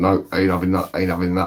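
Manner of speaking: ordinary talk, nothing marked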